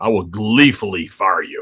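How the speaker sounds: low, deep baritone voice. Quoting the boss's own words on firing people: Vince McMahon voice. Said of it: "as he would say".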